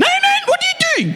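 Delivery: very high shouted South African outburst. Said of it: "You see these big burly guys like".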